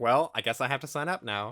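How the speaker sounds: normal talking voice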